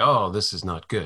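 ordinary delivery

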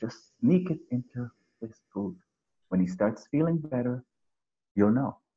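hushed, secretive half-whisper. Retelling advice given to a woman at a demo: imitating a half-whisper. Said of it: "I whisper to her and I said".

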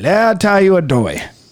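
wild, heavily exaggerated Cajun accent, lively storytelling delivery. Imitating a TV cooking-show chef's craziest Cajun accent: Justin Wilson Cajun accent. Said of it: "craziest Cajun accent".

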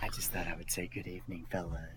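joking, very soft put-on whisper. Greeting the others on the podcast late at night: put-on whisper. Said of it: "gonna whisper to us?".

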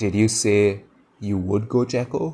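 ordinary delivery

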